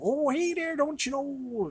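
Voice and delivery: put-on high Wisconsin accent. Describing a former coworker's way of talking, in a Michigan, Wisconsin accent impression. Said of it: "Michigan, Wisconsin, northern Pennsylvania kind of".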